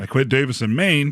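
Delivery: ordinary talk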